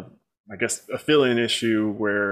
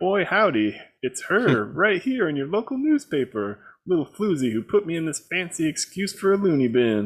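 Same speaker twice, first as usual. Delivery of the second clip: put-on goofy, rural country accent, pitched higher; 7 semitones higher than usual. Reading aloud a comic book character's line, in a goofy country accent. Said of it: "Europeans think we all sound like this".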